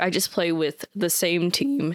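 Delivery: cracking, breaking voice. Describing how they replay a game with one team, voice cracking. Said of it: "my voice cracked".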